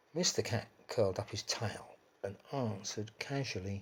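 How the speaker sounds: ordinary delivery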